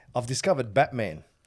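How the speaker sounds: plain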